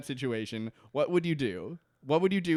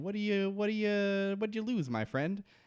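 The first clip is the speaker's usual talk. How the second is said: acted small, timid, high little voice, from off to one side; 6 semitones higher than usual. Retelling a TV scene, quoting a voice from off screen: timid little voice. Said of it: "a timid little voice".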